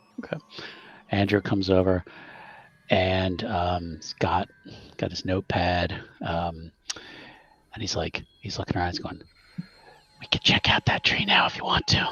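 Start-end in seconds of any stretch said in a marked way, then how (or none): 10.2-12.1 hushed whisper, higher pitch. Voicing a kid suggesting to check out a tree: whispering. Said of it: "Why are you whispering?".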